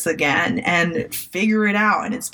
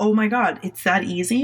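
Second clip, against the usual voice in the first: acting out crying, tearful voice; 2 semitones higher than usual. A new coach recalls a first client hiring them, retelling crying in the car. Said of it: "just crying like".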